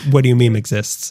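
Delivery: normal talking voice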